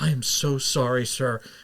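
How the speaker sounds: embarrassed apologetic voice. Retelling a waitress apologizing after hearing the food was terrible: imitating a mortified waitress. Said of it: "She was mortified".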